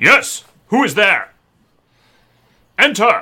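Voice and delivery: powerful, authoritative voice. Narrating a scene, the voice behind the door answers a knock, very commanding, powerful voice. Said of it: "a very commanding, powerful voice say".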